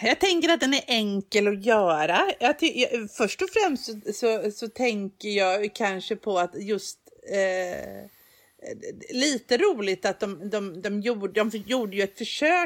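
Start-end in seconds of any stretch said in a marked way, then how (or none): 11.4-12.7 försök stressed with a falling tune. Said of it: "med betoning på försök".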